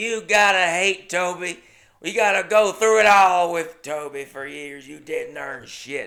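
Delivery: put-on furious old woman's voice. Retelling an old woman at the bar confronting him, imitating Charlotte, livid. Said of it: "she was livid".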